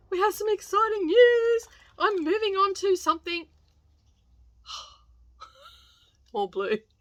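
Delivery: mock excited high voice.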